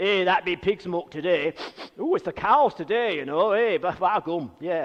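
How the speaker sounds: put-on Derbyshire English accent. Recalling what the farmer who mentored you would say, in a not very good Derbyshire accent. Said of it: "it's not a very good Derbyshire accent".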